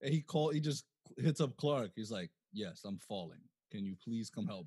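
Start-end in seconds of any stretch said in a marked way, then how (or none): 2.5-4.7 put-on dead serious voice, lower and quieter. Retelling how Batman calmly calls Clark while falling: dead serious Batman voice. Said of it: "He's dumb serious".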